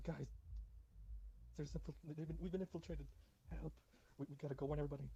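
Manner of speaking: urgent, frantic, panicked, tripping over words. A player's character calls out to the party, yelling frantically. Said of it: "I'm yelling at them".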